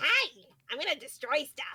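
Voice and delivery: goofy, silly little creature voice. Imagining the D&D party's favorite NPC, a little kobold, in a silly little kobold voice. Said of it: "a little kobold that's just like".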